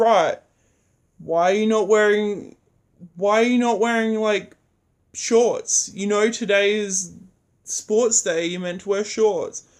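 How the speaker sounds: loud, big-voiced, grumpy, angry scolding voice. Retelling how a teacher told off students in front of the school: imitating an angry teacher yelling. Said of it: "screamed at in front of".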